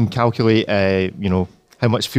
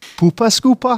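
Geordie twang, pitched very high; 12 semitones higher, 3 dB louder than usual. Host repeating a phrase for another presenter, in a geordie accent. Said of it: "Geordie accent".

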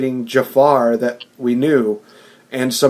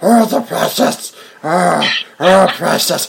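very high-pitched creature voice; 5 semitones higher than usual. Imagining how he'll sound in the movie: Gollum voice. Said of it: "he's going to sound like Gollum from Lord of the Rings. Like".

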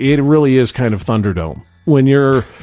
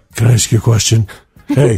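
put-on breathy voice; 3 semitones lower than usual. Retelling a stranger's question at a turnstile: imitating a breathy voice. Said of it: "Really breathy like that?".

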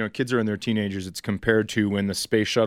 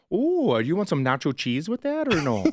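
sing-song Minnesota accent, pitched up; 7 semitones higher than usual. Speaker showing the accent they grew up with: minnesota accent. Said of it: "Can you do the Minnesota accent?".

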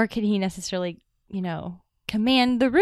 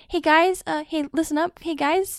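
mock awkward teenager voice, much higher pitch; 8 semitones higher than usual. Describing how a hero would lead a team, imitating Peter Parker. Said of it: "He's an awkward teenager. He'll be like".

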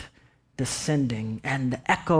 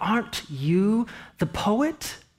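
simmering, joyful tone, pitched up; 7 semitones higher than usual. Retelling a woman asking you a second time, with mock simmering joy. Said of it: "with this simmering joy".

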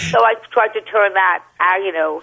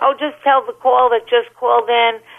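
normal talking voice

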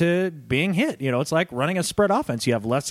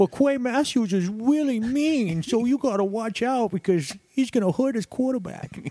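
put-on whiny voice, pitched higher; 6 semitones higher than usual. Show host retelling how Harbaugh complained to the league, mock-whiny Harbaugh impression. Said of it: "how he sounded".

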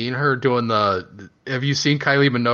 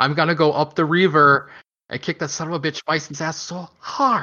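put-on higher-pitched non-American accent; 6 semitones higher than usual. Discussing a movie, imitating Van Damme's non-American accent. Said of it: "no American would say it like that".

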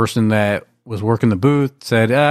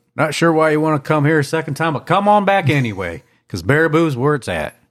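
put-on southern US accent on every word; 4 semitones higher than usual. Joking with a co-host about a town's visitor sign: southern accent. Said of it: "I used my southern accent".

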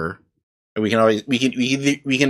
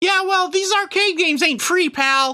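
very high put-on little elf voice. Voicing an elf in a group game, answering a player: elf voice. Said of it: "I do an elf voice".

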